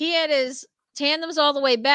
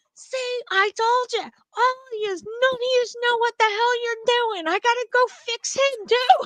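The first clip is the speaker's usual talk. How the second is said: put-on very high, grumpy, cranky old man yelling; 11 semitones higher than usual. Retelling what a man said when a c r england guy came in: imitating an old man yelling. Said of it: "he's still yelling".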